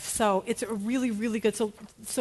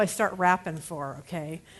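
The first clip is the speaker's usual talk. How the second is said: normal talking voice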